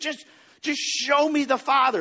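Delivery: mock exasperated, fed-up, high frustrated outburst. Retelling how a disciple screamed at Jesus: imitating someone screaming. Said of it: "He just kinda screams it at Jesus".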